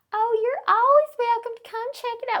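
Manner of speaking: put-on friendly Texan accent, very high and very loud. Retelling how an engraver talked to him, Eddie Martis's Texan accent. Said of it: "with this Texan accent".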